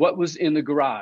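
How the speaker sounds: ordinary talk, nothing marked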